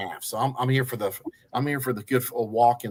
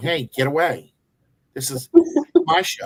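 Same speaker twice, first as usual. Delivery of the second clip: put-on aggressive dog voice, higher and louder; 5 semitones higher, 5 dB louder than usual. Voicing a pet dog getting aggressive toward the other dog: voicing an aggressive dog. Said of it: "She'll get aggressive to Mocha going".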